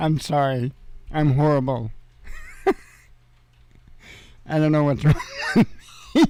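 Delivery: words spoken while laughing. Apologizing after a joke about something horrifying, laughing while talking. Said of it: "and I'm laughing".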